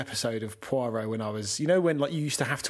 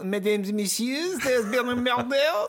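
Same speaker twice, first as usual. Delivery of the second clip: exaggerated, over-the-top fake French accent; 10 semitones higher than usual. Speaker imitating how an english voice actor delivers the line, exaggerated fake french accent. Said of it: "But does he do the full".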